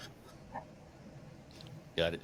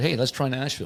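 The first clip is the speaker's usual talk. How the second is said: normal talking voice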